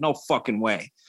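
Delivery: put-on Boston accent, exclaimed. Retelling a reply on a FaceTime call: imitating Kenny's Boston accent. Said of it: "In his gross ass Boston accent".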